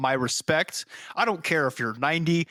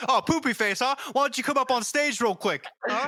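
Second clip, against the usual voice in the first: put-on sudden, goading, high-pitched triggered snap; 7 semitones higher than usual. Acting out snapping at a kid who heckles: acting out snapping at a heckler. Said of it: "watch you just, like, snap".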